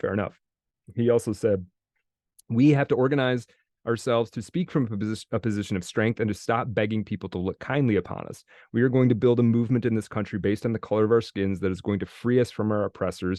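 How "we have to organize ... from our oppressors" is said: ordinary talk, nothing marked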